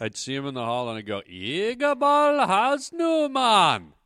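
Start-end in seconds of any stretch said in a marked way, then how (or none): 1.3-3.8 very high, very loud, swooping put-on Jamaican yell. Recalling greeting a boarding school classmate in the hall: jamaican voice. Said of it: "I would do a Jamaican voice".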